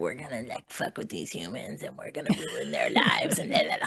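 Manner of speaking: hushed, breathy, whispered reptilian creature voice. Describing what reptilians want, the speaker voices them in a changed reptilian voice. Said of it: "love that you had to change your voice for".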